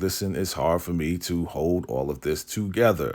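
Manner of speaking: ordinary talk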